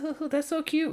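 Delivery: put-on giggling, very high-pitched voice. Retelling how she reacts to an animated pig video; imitating a giggle. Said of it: "she like giggles like".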